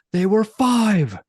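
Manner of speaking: put-on furious, high, loud angry old-man yell. Retelling how Grandpa yelled at Ryan at the table, retelling an angry yell. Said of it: "he like slams his fist on the table and he yells".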